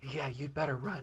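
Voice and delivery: quiet muttering. Muttering under the breath in Fia's negotiation voice. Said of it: "under her breath in, uh, Fia's voice, that negotiation voice".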